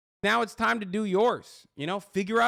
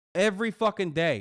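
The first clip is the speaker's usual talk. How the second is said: ordinary talk, nothing marked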